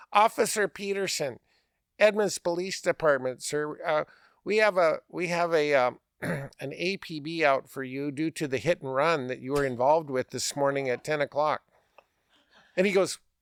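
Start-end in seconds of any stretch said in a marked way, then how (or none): none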